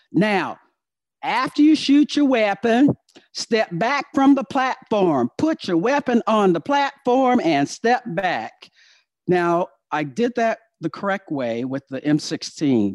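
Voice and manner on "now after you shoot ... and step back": put-on Southern American accent, pitched up. Retelling a sergeant major's range instructions: imitating a southern accent. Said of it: "everybody has a Southern accent in my, in my, uh, jokes".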